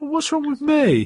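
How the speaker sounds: very high, acting all hurt, mock hurt-sounding. Describing a scene, voicing a woman's reply to a man: mock-hurt tone. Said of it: "she starts acting all hurt".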